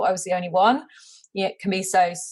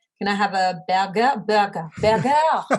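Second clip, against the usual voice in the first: burger said the French way, put-on French accent. Explaining how English words must be said in France, using a French accent. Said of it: "say like English words with a French accent".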